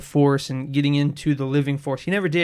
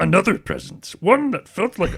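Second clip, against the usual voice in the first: put-on wise old alien voice, higher; 5 semitones higher than usual. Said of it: "You should have read it in his voice".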